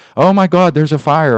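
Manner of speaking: full-throated, high, shrill screaming. Retelling the secretary's alarm about a fire: imitating someone screaming. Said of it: "that lady over there screaming about a fire".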